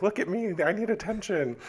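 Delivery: put-on very high, obnoxious attention-seeking kid voice.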